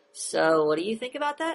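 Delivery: rising tune on the final "that". Demonstrating the questioning tone he says he never uses, rising question intonation. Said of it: "you never hear my voice go".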